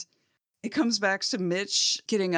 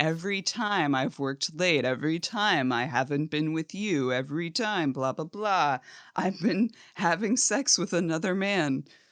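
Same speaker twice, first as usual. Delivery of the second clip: ordinary talk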